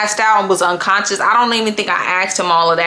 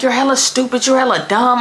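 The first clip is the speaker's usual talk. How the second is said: put-on mad, heated, angry yelling voice; 3 semitones higher than usual. Retelling how she yelled at a man she was mad at, retelling an angry yell. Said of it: "I'm mad and I'm yelling at him".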